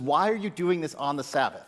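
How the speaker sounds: ordinary talk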